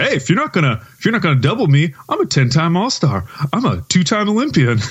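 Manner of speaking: put-on voice, high and swooping in pitch. Retelling a broadcaster's impression of a player boasting: imitating Michael Cage imitating Melo. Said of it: "he was doing an impersonation of Melo".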